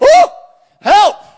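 high, loud mock panic.

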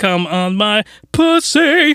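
very slow, halting, broken, terrible English. Speaker retelling a woman's line in a movie scene, imitating terrible English. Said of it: "it was a terrible English".

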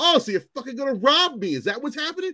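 very high, loud screamed outburst. Retelling a search by an officer who took the cash: retelling own screaming. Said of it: "And I start screaming".

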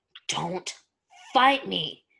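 breathless, winded, growled werewolf snarl. Narrator reading a werewolf's line to Stiles, snarling werewolf voice. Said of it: "the werewolf snarled".

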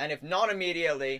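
high, loud proclaiming voice. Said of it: "can you wait until he finishes his monologue".

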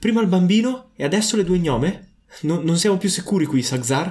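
piercing, ringing, much shriller high creature voice. The narrator voices a second voice answering a deep one, in a much shriller voice. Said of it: "Una voce molto più squillante".

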